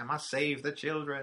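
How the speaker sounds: high-pitched cartoon villain voice. Quoting a line from the He-Man and She-Ra Christmas special: Skeletor voice. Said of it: "where he's like".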